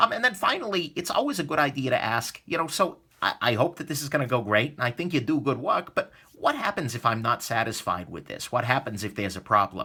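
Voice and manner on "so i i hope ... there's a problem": plain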